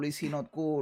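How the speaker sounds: plain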